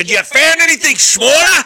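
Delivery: put-on high, loud, belted Australian accent. Quoting a movie line said while hanging off a building: Mel Gibson Australian accent. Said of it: "he's definitely from Australia".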